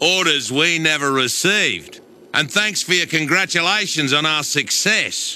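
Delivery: thick, laid-on, exaggerated Australian accent. A character delivering his lines, in a heavily played-up Australian accent. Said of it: "he's really playing up that accent".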